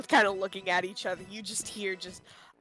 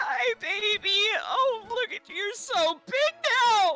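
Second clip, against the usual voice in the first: very high-pitched, sobbing through every word. In a tabletop game, a raptor mother greets her child after he evolved, ugly crying. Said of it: "she's she's just like ugly crying".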